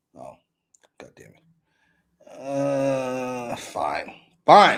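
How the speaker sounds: very slow, grudging, annoyed tone. Giving in after a back-and-forth with another speaker, mad. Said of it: "Why are you so mad about that?".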